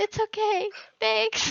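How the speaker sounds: mock wailing through tears, very high and loud. Retelling own reply to an apology while sobbing: imitating own crying voice. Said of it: "I'm just crying".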